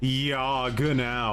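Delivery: dry, sarcastic, annoyed tone. Showing how to say Genau to someone annoying you, sarcastic agreement. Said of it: "it's sarcastic".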